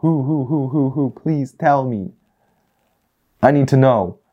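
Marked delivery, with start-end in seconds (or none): 0.0-1.1 owl-like hooting sounds. Speaker repeating a question, hooting like an owl. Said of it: "I'm sounding like an owl right now".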